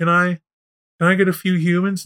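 softly spoken. Worm wiggles over and addresses Spider, speaking in a soft voice. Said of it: "says in a soft voice".

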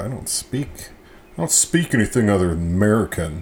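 clueless, know-nothing, ignorant American voice. Reviewing a PB and jelly beer, admitting to speaking only American, ignorant American voice. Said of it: "That's that's my ignorant American voice".

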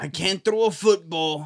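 put-on New York accent. Starting a joke bit in front of the others: Anthony Fauci impression. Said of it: "here he goes again with the, with the theater".

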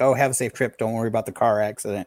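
ordinary talk, nothing marked

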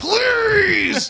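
very loud, high, long drawn-out yell. Quoting a favorite movie line, Samuel L. Jackson yelling please. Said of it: "you say it a la Sam Jackson going".

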